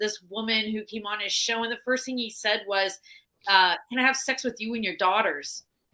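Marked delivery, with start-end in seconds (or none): none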